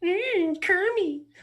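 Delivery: squealing way up high. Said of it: "Muppet voices".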